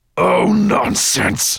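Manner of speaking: very high, loud, menacing growl. Narrating a story, the dragon answers his armor cleaner with a menacing growl. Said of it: "Nettlebrand gave a menacing growl".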